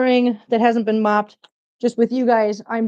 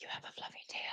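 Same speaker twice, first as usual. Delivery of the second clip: sudden, soft whisper straight into the mic. Speaker retells hearing Christina suddenly whisper into the microphone, whispering like Christina. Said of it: "I hear Christina just whisper".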